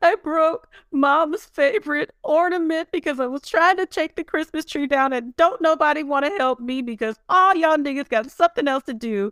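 acted-out tearful crying voice, very high pitch. Retelling a TV recap where a daughter calls her father: imitating someone crying. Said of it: "it's just crying, like".

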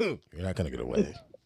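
mock smooth voice, dropped far down low and soft. Repeating to a friend what a man said, the smooth way he said it. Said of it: "He said it all smooth".

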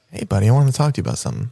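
creepy, unsettlingly soothing, friendly tone. Acting out giving the talk to a future child, in a creepy voice. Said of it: "Use a less creepy voice".

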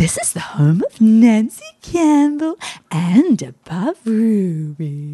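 put-on honey-dripping sweet voice. Imitating mum's answering-machine greeting: imitating mum's honey-dripping voice. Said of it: "she was just so honey dripping".

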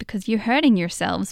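fast, put-on American-accented persona voice. Retelling what a man said in a discussion, American accent. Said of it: "you do an American accent when you sort of do that persona".

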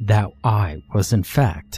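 plain

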